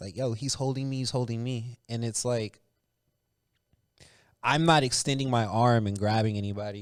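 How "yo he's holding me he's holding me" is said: mock, put-on pleading voice. Retelling how players complained to refs, imitating players pleading with refs.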